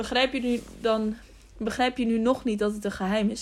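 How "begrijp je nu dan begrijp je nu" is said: usual speaking voice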